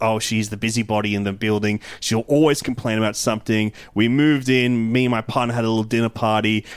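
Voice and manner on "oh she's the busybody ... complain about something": ordinary delivery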